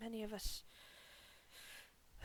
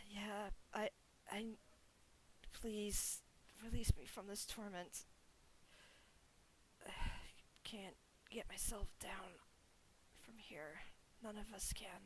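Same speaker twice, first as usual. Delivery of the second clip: very soft, hoarse whisper. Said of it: "pretend he is whispering this to you in a, in a very hoarse voice".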